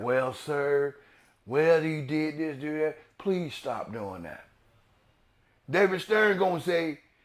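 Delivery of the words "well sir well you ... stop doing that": quiet, low talking. Imitating Adam Silver talking to someone called in: low voice. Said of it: "he gonna talk to you with a low voice".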